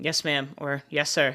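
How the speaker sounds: ordinary delivery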